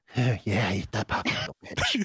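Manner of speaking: low, creepy, leering, taunting drawl. Imagining a creepy stranger approaching on a park bench, imitating a creepy man. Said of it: "I got a creepy guy like".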